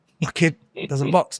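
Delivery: ordinary delivery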